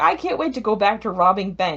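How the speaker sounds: ordinary talk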